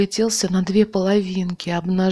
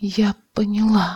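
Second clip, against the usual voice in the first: hushed whisper. Narrator reads Olga answering a man who is yelling at her, whispered. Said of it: "шепотом произнесла Ольга".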